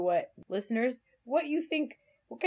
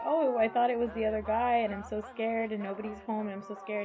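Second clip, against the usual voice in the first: usual speaking voice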